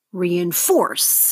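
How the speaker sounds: third syllable force of reinforce stressed and falling. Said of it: "That's the third syllable there".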